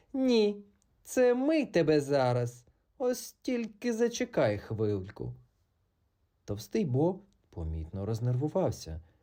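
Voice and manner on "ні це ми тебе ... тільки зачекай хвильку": glad, ringing joyful cry, high and unhurried. Narrator reads a character recognizing an approaching chime: joyful exclamation. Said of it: "радісно вигукнула".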